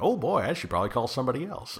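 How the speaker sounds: high-pitched, fast, rattled delivery.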